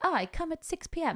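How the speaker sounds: very high, slow, drawn-out fake Italian accent. Retelling a phone call with a late wedding guest, in a bad italian accent. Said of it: "I can't do an Italian accent".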